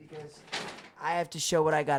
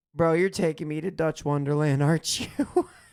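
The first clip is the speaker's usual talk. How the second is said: bone-dry, dead-serious deadpan delivery; 5 dB louder than usual. Retelling a friend's straight-faced guess about the trip: imitating Josh, deadpan. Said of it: "with the straightest face and was like".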